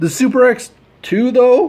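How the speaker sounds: very high breaking voice, hiccup held back. Talking about scaling model tanks, trying not to hiccup; voice cracking. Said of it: "my voice cracked there because I was trying not to hiccup".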